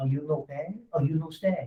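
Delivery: comic, cartoonish French accent. At a closing, speaker addresses the buyer: Pepe Le Pew voice. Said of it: "I'll say it just like that".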